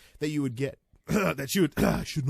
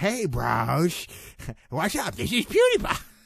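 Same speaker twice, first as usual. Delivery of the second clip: swinging pitch with "bros" stretched out; 3 semitones higher, 3 dB louder than usual. Wondering aloud about a YouTuber's Twitch channel: PewDiePie impression. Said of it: "That does not sound at all like PewDiePie".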